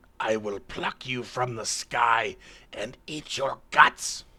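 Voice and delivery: enraged bird creature voice, furious squawking and squealing wail. Game master voicing an enraged creature taunting Stryker: enraged squawking and wailing. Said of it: "squawks and squeals and wails at everybody".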